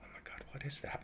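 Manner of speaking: mock quiet amazement. Retelling the moment an idea for the next application hit them, retelling hushed awe. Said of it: "And I was quiet".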